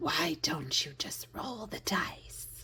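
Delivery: gnarly, disembodied whispered voice. Retelling a guided meditation, the speaker quotes the figure she met: gnarly disembodied voice. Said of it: "in her very gnarly, uh, disembodied voice".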